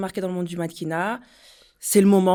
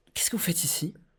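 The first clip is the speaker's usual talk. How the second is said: mock condescending tone, quieter; 9 dB quieter than usual. Retelling what a customer said in the shop: imitating a condescending tone. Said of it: "Littéralement, sur ce ton".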